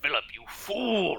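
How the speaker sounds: high, wide, bellowing voice.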